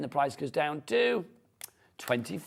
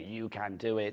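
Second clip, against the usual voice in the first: put-on sinister voice, lower and quieter; 5 semitones lower, 5 dB quieter than usual. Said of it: "in quite a sinister voice".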